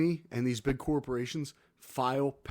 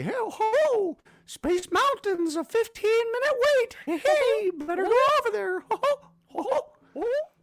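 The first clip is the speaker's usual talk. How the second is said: very high, loud, piping cartoon voice; 8 dB louder than usual. Describing the toy's wait-time alerts in a My Pal Mickey voice. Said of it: "Mickey would pipe up and say".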